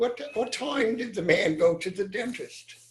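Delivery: put-on British accent, pitched high, for fun. Told to do the rest of the joke in British accents, British accent. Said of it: "Let's do the rest in British accents".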